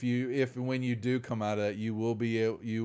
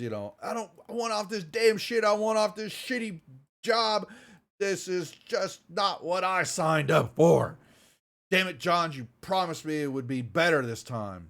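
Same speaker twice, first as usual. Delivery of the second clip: slower hostile character voice; 7 semitones higher, 4 dB louder than usual. Recapping an argument after Johns tells Reed to calm down; hostile Reed voice. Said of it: "She's just getting hostile".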